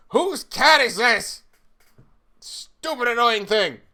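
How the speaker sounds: drawn-out angry yelling. Voicing guards who find a cat in the hall: yelling in character. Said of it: "they're all kind of yelling".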